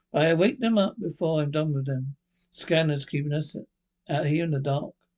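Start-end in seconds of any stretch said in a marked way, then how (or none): none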